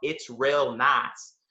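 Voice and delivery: put-on thick Southern American accent, laid on heavily. Recalling a rehearsal where a friend kept drilling a phrase, imitating Olivia's heavy Southern accent. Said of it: "she had this really heavy Southern accent".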